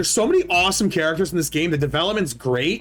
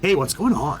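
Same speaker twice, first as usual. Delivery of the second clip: just a trace of stoner voice, a touch lower. Previewing the game protagonist's voice, the speaker demonstrates: a hint of stoner. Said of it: "expect more like the protagonist voice, like just a hint of stoner".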